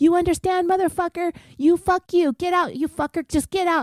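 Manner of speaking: shrill, furious screaming at the top of the lungs. Retelling a fight over a late pizza, imitating a man screaming at another man. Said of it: "begins screaming at the top of his lungs".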